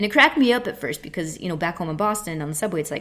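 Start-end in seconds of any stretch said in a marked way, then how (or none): none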